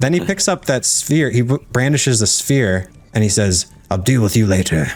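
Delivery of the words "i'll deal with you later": put-on threatening creature voice. Retelling a game scene, a character brandishes the sphere and speaks: intellect devourer voice. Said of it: "in his intellect devourer voice".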